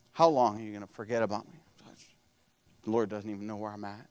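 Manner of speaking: hushed, low, fast grumbling under the breath. Acting out David complaining that God has forgotten him; imitating David mumbling. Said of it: "He's kind of mumbling".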